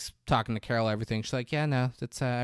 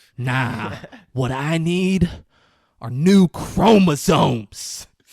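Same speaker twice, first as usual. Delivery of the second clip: furious, bitter, very loud angry shout; 3 semitones higher, 11 dB louder than usual. Retelling a scene where the actor answers a doctor, mock-angry Matthew McConaughey. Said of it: "then he storms out of the room".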